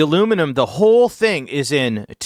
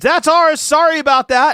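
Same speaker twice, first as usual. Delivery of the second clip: acted-out scream, very high-pitched; 12 semitones higher, 4 dB louder than usual. Retelling how a housemate ran out the front door: imitating a scream. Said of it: "shoots out the front door and screams".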